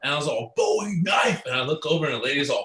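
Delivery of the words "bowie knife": very high, shouted top-of-the-lungs scream. Retelling screaming while driving through town: re-enacting own past scream. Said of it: "obviously screamed at the top of my lungs".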